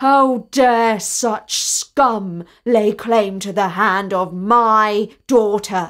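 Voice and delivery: loud roaring bellow, "my" drawn out. Reading a tale aloud, the narrator voices the prince answering the boy, bellowing. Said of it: "The prince bellowed".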